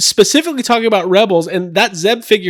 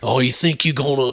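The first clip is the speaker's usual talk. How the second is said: put-on Australian-like alien voice, lower, quieter; 5 semitones lower, 5 dB quieter than usual. Trying out an impression of Zeb defending Sabine Wren: Zeb impression. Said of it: "muster up a good Zeb impression".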